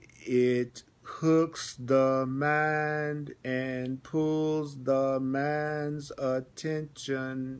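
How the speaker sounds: very slow, drawn-out reading, each word landing. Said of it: "Notice I'm reading slowly".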